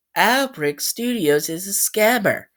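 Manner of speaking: slow, synthetic computer assistant voice, AI-like. Showing how the AI voice said the words: imitating a Siri-like AI voice. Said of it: "where it sounds like this".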